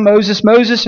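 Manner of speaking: ordinary delivery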